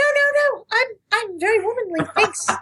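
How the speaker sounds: very high, slow, womanly falsetto. Retelling a male caller's reply to sounding manly: imitating a falsetto voice. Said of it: "he went straight to the falsetto".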